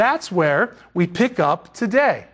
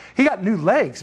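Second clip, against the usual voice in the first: normal talking voice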